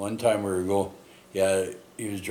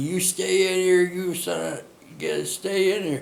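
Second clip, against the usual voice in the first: play-acted urgent yell with raised pitch; 11 semitones higher, 4 dB louder than usual. Retelling the driver yelling at him during a jackknife: imitating someone yelling. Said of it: "He's yelling at me".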